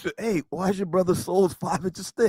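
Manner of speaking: put-on whispering voice. Retelling what people said to the speaker at an event: imitating someone whispering. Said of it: "came up to me and whispered".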